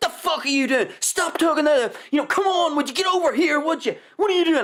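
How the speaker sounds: mock very high, nasty barking shout. Describing nasty dog owners, mock shouting at a dog. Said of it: "they're shouting at the dog going".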